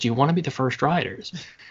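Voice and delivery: secretive, hushed, confiding half-whisper. Retelling a cast member turning around to them: retelling a half-whisper. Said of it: "just kind of whispered to us".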